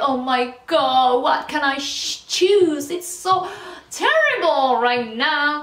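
slow, drawn-out mock dramatic English heroine voice.

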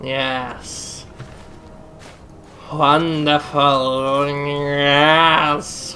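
villainous vampire-lizard creature voice, drawn out. Gamer voices the in-game vampire lizards, in an evil vampire lizard voice. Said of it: "I'm doing my evil vampire lizard voice".

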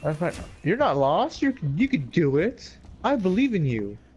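sing-song, over-the-top sarcastic mock-encouraging tone. Playing Alien Isolation, answering their own complaint about being lost: sarcastic encouragement. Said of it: "Your sarcasm helped me to victory".

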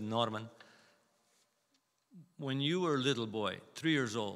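put-on English spoken in a Polish accent. Retelling what his grandmother told him after they prayed together, Polish accent. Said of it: "in Polish accent".

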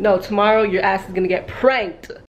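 plain

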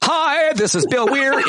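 put-on unmanly voice. Joking that the other speaker's real voice is fake: Truman Capote voice. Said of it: "Like Truman Capote voice or something".

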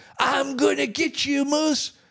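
acted out, high, shrieked scream. Recounting his brother taking off in his truck, retelling a scream.

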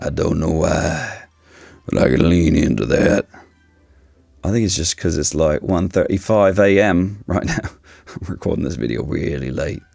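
hoarse, rough voice. Speaker recording a video very late at night: raspy voice. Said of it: "my voice is like raspy today".

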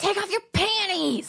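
very high, loud yelled shout. Recounting a young guy on stage yelling at the speaker, retelling a yell. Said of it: "yells at me and goes".

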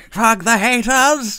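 very high, loud, blaring screech, done badly. Discussing the Dalek movies and their haters, doing a bad Dalek impression. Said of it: "That was the worst Dalek impression ever".

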